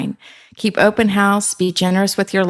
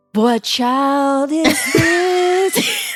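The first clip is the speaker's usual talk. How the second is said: very high, swooping radio announcer delivery; 10 semitones higher than usual. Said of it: "I'm talking like a radio person".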